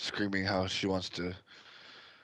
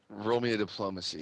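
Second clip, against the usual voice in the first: plain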